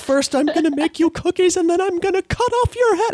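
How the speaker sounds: very high-pitched politician voice. Demonstrating the dueling routine you do on stage with your boyfriend, as an Elizabeth Warren impression. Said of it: "do the dueling Elizabeth Warrens".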